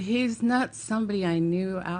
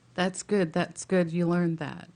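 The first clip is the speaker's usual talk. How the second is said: plain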